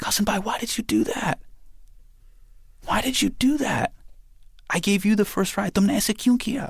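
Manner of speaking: mock sobbing, very high-pitched and tearful. Retelling how his sister ran over crying after the bike crashed: imitating a crying sister. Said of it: "she's just crying".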